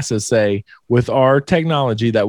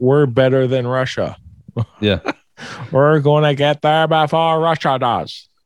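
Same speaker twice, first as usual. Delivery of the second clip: put-on Boston accent politician voice. Imitating the government in the Cold War: JFK impression. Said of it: "That's my J F K impression".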